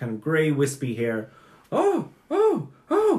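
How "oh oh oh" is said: put-on high-pitched, flustered old woman voice. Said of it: "she was an elderly human".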